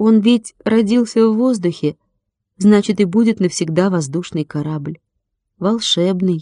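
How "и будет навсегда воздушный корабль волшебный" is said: plain reading voice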